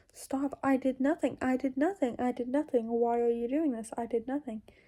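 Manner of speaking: ordinary talk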